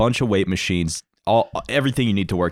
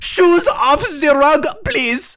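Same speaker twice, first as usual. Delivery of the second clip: very high, loud put-on Swedish or German accent; 6 dB louder than usual. Retelling what a man in the house said when he stepped on the carpet, imitating a swedish man's accent. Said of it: "That's literally how he sounded".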